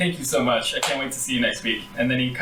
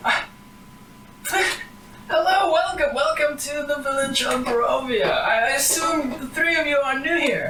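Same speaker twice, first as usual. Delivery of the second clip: put-on bustling old-woman voice, very high; 13 semitones higher than usual. Voicing an elderly woman who rushes over to greet newcomers: elderly woman character voice. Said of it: "she kinda, like, rushes over and she goes".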